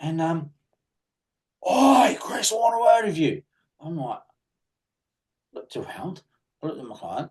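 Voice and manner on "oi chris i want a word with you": imitated screaming, higher and louder. Retelling a client calling across the gym floor: imitating a client screaming. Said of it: "screaming across the sh-, the, uh, gym floor".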